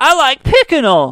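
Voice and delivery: put-on high small child voice with mispronunciations. Retelling a little kid mispronouncing a word, high little kid voice. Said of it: "one of these shitty little kids on there with the high voices".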